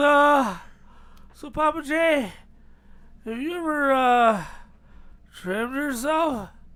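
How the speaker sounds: put-on slow, shaky, frightened voice. Retelling a friend's phone call: imitating Z Money's shaky scared voice. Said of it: "a very shaky voice on the other end".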